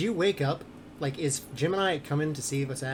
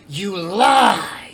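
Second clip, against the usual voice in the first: very loud, high-pitched shrieking demonic screech; 5 semitones higher, 12 dB louder than usual. Voicing a jar that screams back at a character, demonic screech. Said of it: "the jar just screams out in this like demonic screech".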